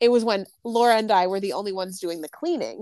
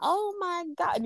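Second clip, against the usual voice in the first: very high, slow, put-on country accent; 10 semitones higher than usual. Quoting a client's apology and slipping into an unexplained put-on accent. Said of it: "I don't know why I'm doing an accent".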